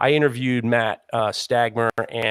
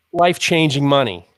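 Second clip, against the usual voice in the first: ordinary talk, nothing marked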